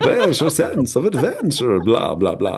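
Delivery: put-on sing-song, high vampire character voice. Telling a story, voicing the vampire's line in a vampire voice. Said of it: "voice for the vampire".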